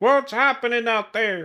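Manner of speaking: mock angry yell, high-pitched and loud.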